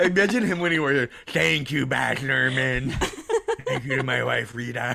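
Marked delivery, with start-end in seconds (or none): 1.3-5.0 creaky, croaking goblin voice with big pitch swoops. Imitating an actor who narrates a movie: Tom Hanks goblin voice. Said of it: "He still talks like this".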